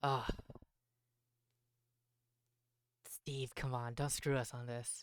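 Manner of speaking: muttering under breath. Retelling what a man says about a delayed delivery, muttering under breath. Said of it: "he kind of mutters underneath his breath".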